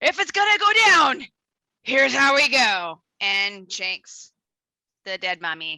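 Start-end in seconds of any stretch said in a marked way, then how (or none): 0.0-3.0 acted, very loud yell. Sneaking up on a mummy, then shouting in character before attacking. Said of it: "and then shout".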